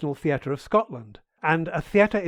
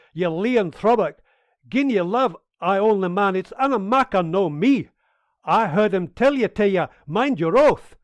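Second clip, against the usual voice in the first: terrible, bad put-on Scottish accent; 3 semitones higher, 3 dB louder than usual. Performing the Silvio character's lines, Silvio in a bad Scottish accent. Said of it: "one more example of my uh, terrible Scottish accent".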